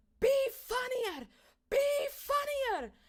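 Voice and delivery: very loud, shrill, very high-pitched screaming. Recalling a woman screaming close to their face, retelling a scream. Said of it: "she's just screaming at me".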